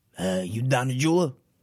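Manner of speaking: put-on mobster voice. Acting out a mafia movie scene as Lefty: Al Pacino as Lefty voice. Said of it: "you gotta get Pacino'd out".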